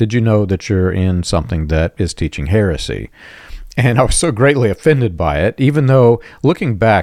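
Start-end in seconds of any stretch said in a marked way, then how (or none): none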